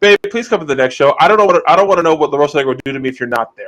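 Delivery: normal talking voice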